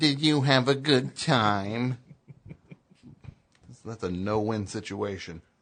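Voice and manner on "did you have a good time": put-on loud, condescending, drawn-out talk-to-a-child voice. Showing another question asked the same way, belittling, talking-to-a-child voice. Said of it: "belittling you as I'm asking it".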